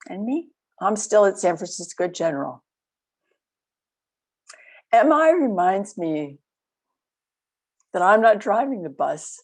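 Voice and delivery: voice catching, choking up with emotion. Describing someone's recovery and your own role in it, choking up. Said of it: "Excuse me for the choking up".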